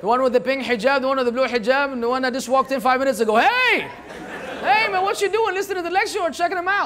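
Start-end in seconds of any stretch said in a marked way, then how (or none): 3.4-6.9 light, playful teasing tone, pitched up. A lecturer calls out a man in the audience, teasing. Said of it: "I'm just teasing you".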